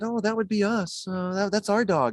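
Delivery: acted bashful voice. Retelling how the couple answered about their dog: imitating a shy reply. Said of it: "they shyly said".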